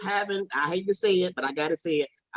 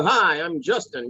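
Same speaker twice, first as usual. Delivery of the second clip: put-on broadcast announcer voice. Speaker teases someone about how they sound once on the air: imitating someone's on-air voice. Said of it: "soon as you get on the air".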